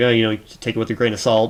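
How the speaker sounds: usual speaking voice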